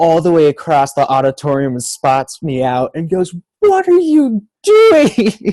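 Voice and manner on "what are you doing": acted, very high, drawn-out screaming yell. Retelling a teacher calling across the auditorium: imitating a teacher screaming. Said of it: "she's screaming at me".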